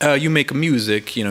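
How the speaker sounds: put-on Greek-accented English. Retelling what the guy she had a connection to said to you, do a Greek impression. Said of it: "that's my Greek impression".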